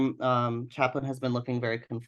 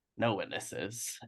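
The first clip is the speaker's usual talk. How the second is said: very gruff, breathy, rough whispered rasp, not menacing; 4 semitones lower, 9 dB quieter than usual. In a game scene, Chaplin turns on Wright as bullets fly: very gruff Chaplin voice. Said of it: "in a very gruff, not typical Chaplin voice".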